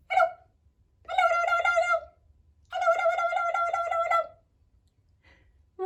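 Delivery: very fast, high-pitched, rapid-fire, rattled off. Leading a group through a hello rhyme game, saying hello very fast. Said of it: "Let's say hello as fast as we can".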